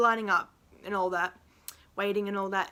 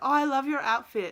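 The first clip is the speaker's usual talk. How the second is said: put-on good British accent, pitched up; 5 semitones higher than usual. Retelling meeting Martin for a photo, imitating Martin's British accent. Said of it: "in a British accent".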